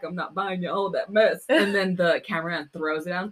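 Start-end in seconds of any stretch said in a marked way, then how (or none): 0.0-1.4 put-on inappropriate grandpa voice, louder. Quoting a line from a video: imitating Brendan Rodgers' inappropriate grandpa. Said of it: "when he's his inappropriate grandpa".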